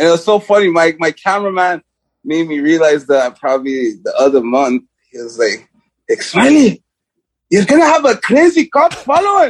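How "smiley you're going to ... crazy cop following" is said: failed fake German accent, very high-pitched. Quoting what their cameraman told them, bad German accent. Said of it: "I was trying to do a German accent".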